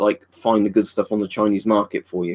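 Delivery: plain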